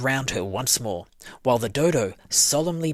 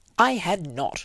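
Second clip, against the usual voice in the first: very angry, sharp, high outburst; 5 semitones higher than usual. Narrator reads the Mouse retorting to Alice, sharp and very angry. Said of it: "cried the Mouse sharply and very angrily".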